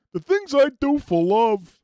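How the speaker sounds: cowardly cartoon dog voice, high, loud and swooping. Announcing he'll play the character saying it, then doing a Courage the Cowardly Dog impression. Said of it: "I'm going to play courage saying that".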